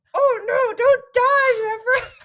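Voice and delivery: shrill, very loud puppet-theater voice. Acting out a tragic scene like children's puppet theater, in [name]'s silly Muppet voice. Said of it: "in their Muppet voices. Like children's puppet theater".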